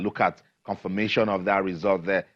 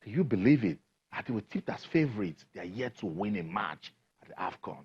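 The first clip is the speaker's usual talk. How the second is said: hushed, stunned half-whisper full of disbelief; 6 dB quieter than usual. A sports news host speaking to viewers, half-whispering. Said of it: "I'm whispering because I didn't see that coming".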